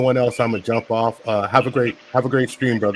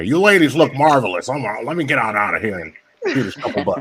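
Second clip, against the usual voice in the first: put-on suave, smooth, charming old man voice. Greeting the ladies again, playing it up: smooth old man voice. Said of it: "that's that old man Smooth game right there".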